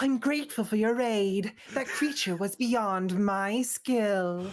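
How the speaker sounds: loud cartoon cat character voice. Asked by another speaker for one on the spot, the speaker does a Blaze the Cat impression. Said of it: "Blaze the Cat impression".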